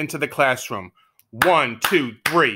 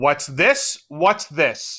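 harsh, stern, rasping bark. Narrator reading; a voice behind the main character after a clap, stern, raspy bark. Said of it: "Barked a stern, raspish voice".

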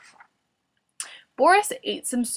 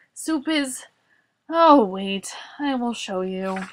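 ordinary delivery

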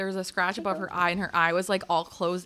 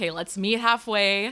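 normal talking voice

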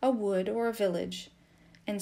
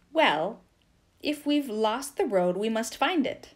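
curt, brusque, louder; 2 semitones higher, 5 dB louder than usual. Narrator reads Nikita answering Vasily Andreevich after losing the road, curtly. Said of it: "said Nikita curtly".

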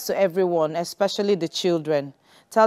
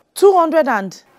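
shouting, much higher and louder; 10 semitones higher, 7 dB louder than usual. Told to bring 275,000 naira, the listener shouts back. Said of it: "Why are you shouting?".

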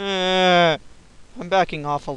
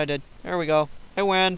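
ordinary talk, nothing marked

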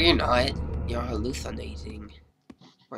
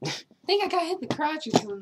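put-on, much higher-pitched voice. Gamer playing and voicing a character in a high-pitched voice. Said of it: "Man, I'm high pitched".

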